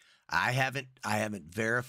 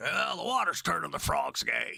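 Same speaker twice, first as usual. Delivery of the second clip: raised, put-on ranting voice. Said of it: "He's like".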